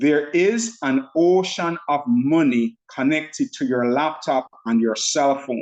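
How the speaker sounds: slow, deliberate, unhurried, each word laid out. Speaker repeats a statement to everybody, saying it slowly. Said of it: "Let me say it slowly".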